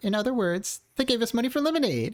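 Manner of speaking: put-on generic girl voice. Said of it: "I guess I could just do the generic".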